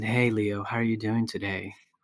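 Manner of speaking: very low, soft, hushed voice. Retelling how a man in an office greeted the speaker, in a very low voice. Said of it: "he had this very low voice".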